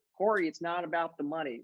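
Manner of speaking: put-on, country-style Texas accent. Quoting what millionaire real estate agents always said: texas accent. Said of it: "That's my Texas accent".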